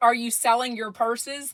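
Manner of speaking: ordinary talk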